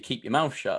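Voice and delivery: ordinary delivery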